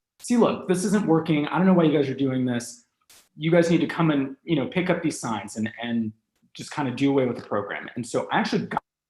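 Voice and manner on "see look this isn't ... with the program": ordinary delivery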